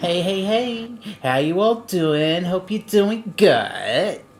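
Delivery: whiny, high, drawn-out put-on host voice. Taking a go at imitating Carrie: imitating Carrie's whiny voice. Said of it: "And Carrie's the same thing".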